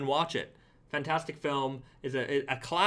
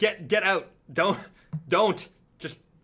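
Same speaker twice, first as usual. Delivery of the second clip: loud mock yelling, stammering with doubled-up words; 4 semitones higher, 6 dB louder than usual. Retelling yelling at a girl in a phone booth, retelling yelling at someone. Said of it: "I'm yelling at her".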